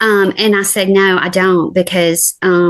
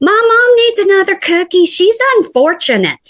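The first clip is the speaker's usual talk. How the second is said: sudden yell, pitched very high; 13 semitones higher than usual. Retelling what a son yelled over an empty fortune cookie: imitating someone yelling out. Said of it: "And he just yells out".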